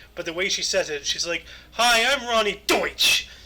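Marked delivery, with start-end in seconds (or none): 1.7-3.3 pushy, loud, drawn-out, aggressive yell. Recalling an old insurance commercial, the speaker imitates its presenter: yelling Ronnie Deutsch impression. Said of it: "Why are you yelling at me with your last name?".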